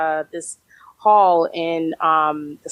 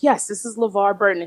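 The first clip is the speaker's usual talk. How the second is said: very distinguished, refined voice; 3 semitones higher than usual. Retelling a phone call to Mom: imitating LeVar Burton's distinguished voice. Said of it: "in his very distinguished voice".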